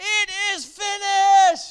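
shrill, piercing, high, very loud scream. Retelling a cry from the cross in a sermon: imitating a scream. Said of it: "he screams out".

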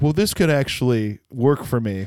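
normal talking voice

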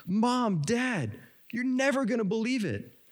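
high-pitched, eager and excited exclaim. Telling a joke, a freshman visiting campus calls out to Mom and Dad; mock-excited exclaim as Little Johnny. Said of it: "he exclaims".

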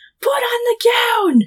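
play-acted very high, stretched, drawn-out yell. Retelling a scene where he shouts at her: imitating a shout. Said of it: "And then he shouts".

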